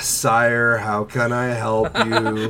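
put-on bored monotone voice. Acting out a goth chick who doesn't want to be there, mock-bored Squidward monotone. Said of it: "Very Squidward".

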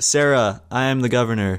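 ordinary delivery

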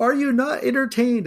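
high, shrill yell at full volume, acted. Recounting a player who yelled out during a round: retelling a full-lung yell. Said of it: "at the top of his lungs".

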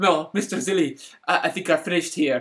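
very bad, put-on Scottish accent. Retelling a man's words from a show, in a terrible put-on Scottish accent. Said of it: "putting on the worst Scottish accent I've ever heard".

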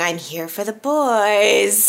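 put-on creepy voice. Recapping a scene where Chelsea shows up at the door; creepy Chelsea voice. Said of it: "Creepily saying".

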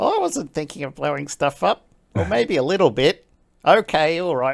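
put-on high Australian accent with swooping, swinging pitch. Voicing a character copied from online videos, Aussie accent. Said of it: "I particularly like doing the Aussie guy ... And he's like".

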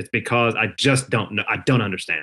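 a little exasperated, baffled and frustrated. Speaker admits some frustration while explaining their view, slightly frustrated. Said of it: "a little bit of frustration in my voice".

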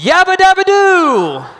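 shrill, very high, swooping top-of-lungs yell, "doo" stretched. Retelling how his future wife jumped up in a silent arena: imitating a shout at the top of her lungs. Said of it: "shouts out loud to the top of her lungs".

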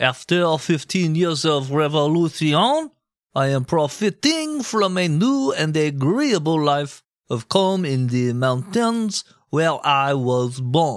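put-on French accent. Narrating history, the speaker quotes a letter Lafayette wrote home, in Lafayette's French accent. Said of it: "You just nailed that fucking accent".

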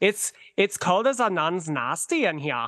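put-on Swedish accent. Recalling a phrase he and his sister used to say, in a Swedish accent. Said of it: "I'm pretty good at a Swedish accent too".

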